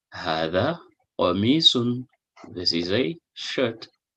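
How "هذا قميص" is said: ordinary delivery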